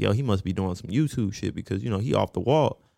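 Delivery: ordinary delivery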